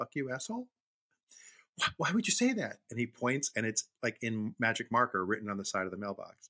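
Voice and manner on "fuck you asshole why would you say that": sweet-as-can-be, high, innocent voice. Retelling a boy answering his mother, imitating a sweet-as-can-be tone. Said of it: "sweet as can be".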